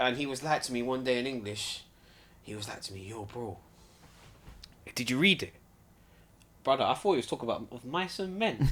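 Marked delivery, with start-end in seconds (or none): 3.1-5.5 hushed, secretive stage whisper under the breath. Retelling what a schoolmate asked one day in english: imitating a whisper. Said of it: "the way he whispered".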